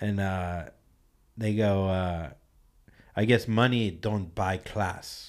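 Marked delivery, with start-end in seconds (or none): 3.2-5.3 put-on Russian man's accent. Retelling what the people in the next car said to Tim, in a Russian-guy accent. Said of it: "He was like a Russian guy".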